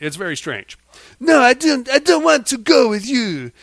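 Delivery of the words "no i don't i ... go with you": clumsy, bad put-on Italian accent, pitched up. Retelling a film scene, voicing her refusal to go, in a bad italian accent. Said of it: "my Italian accent sucks".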